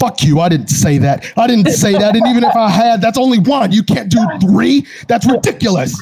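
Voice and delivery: shrill, very high, furious raging scream. Voicing a character holding a monkey's paw: screaming in character. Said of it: "screaming at it".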